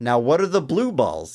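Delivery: ordinary talk, nothing marked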